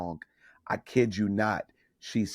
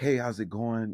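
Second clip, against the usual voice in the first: casual, smooth, playing-it-cool put-on voice. Retelling greeting an actress before the show: imitating acting cool. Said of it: "trying to be cool or whatever".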